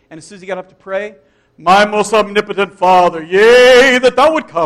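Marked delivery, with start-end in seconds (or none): 1.6-4.7 very loud, pompous, deep, slow, booming, drawn-out intoning. Retelling how a man sounded when he got up to pray, mock King James prayer voice. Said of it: "He would deepen his voice and talk all King James".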